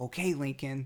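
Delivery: ordinary delivery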